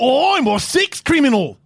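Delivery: high put-on Australian accent. Prompted by the others to show off his Australian accent. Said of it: "Travis actually does a phenomenal Australia".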